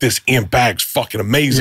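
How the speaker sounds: ordinary talk, nothing marked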